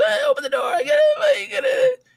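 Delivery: very high, panicked, frantic crying shout. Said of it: "Paul is like".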